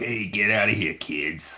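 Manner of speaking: put-on broad, thick Brooklyn accent, very slowly drawn out. Describing a guy yelling at kids at an event in Queens, very Brooklyn accent. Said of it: "Like very Brooklyn accent".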